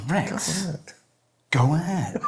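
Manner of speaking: put-on mild exasperation. Repeating the other speaker's line back, mimicking mild exasperation. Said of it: "I love the small amount of exasperation in that tone".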